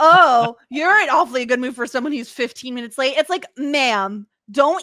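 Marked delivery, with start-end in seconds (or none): 0.0-3.1 loud, pointed, shady put-on tone. Retelling a scene, imitating Jocelyn's shady jab. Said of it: "Jocelyn's shade".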